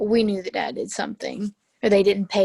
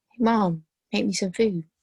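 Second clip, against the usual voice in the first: ordinary talk, nothing marked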